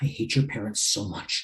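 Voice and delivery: barely audible whispered aside, muttered under the breath. Playing a character running past Danny to a door: muttering under breath. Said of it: "I kinda mutter under my breath".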